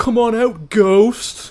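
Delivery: high, loud, dim-witted taunting voice. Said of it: "the main guy in it is, he's an idiot. He's always".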